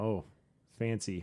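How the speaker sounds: heavily sarcastic. Reacting to hearing dish number one is a pickle platter: sarcastic. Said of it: "With full sarcasm there".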